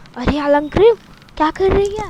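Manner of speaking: ordinary delivery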